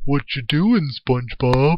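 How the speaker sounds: high, loud, dopey cartoon voice. Speaker imagines a drawn flower peeking around a corner, in Patrick Star voice. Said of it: "I can do Patrick's voice".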